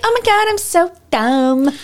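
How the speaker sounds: put-on very high-pitched, babyish voice. Mocking the stereotyped blonde floozy role while discussing casting, in a high-pitched baby voice. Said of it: "That like high-pitched baby voice".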